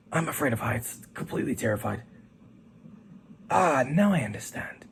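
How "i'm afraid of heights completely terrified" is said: soft, low murmur after a deep breath. Reading a story, the narrator gives a character's answer, murmured after a deep breath. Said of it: "took a deep breath and murmurs".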